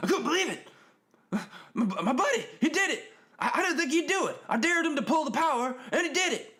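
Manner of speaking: high, loud, hyper joking announcer voice. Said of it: "and he's like".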